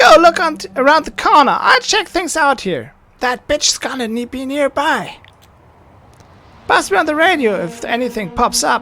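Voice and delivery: very high, acidic, shrill, harsh bossy babbling. The loud one sends her companion to look around the corner: high-pitched, harsh babble. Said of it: "A high-pitched voice filled with endless babble. Her words cut through the air, harsh and acidic. She's talking about me, and it's far from flattering. / The one making all the noise is fidgeting non-".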